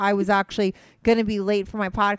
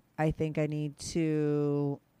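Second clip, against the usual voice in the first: much slower, drawn-out delivery. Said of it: "talk a little slower".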